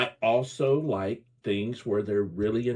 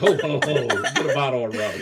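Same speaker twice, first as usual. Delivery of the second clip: jokey, put-on cartoon pirate voice; 4 semitones higher, 3 dB louder than usual. Teasing the other speaker that the way they said it sounded like this: mock pirate voice. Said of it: "the way you said that sounds like".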